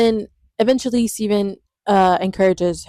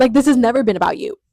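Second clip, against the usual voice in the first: put-on angry voice, higher pitch; 3 semitones higher, 3 dB louder than usual. Retelling a heated scene between two characters, imitating someone mad. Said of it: "she's so mad".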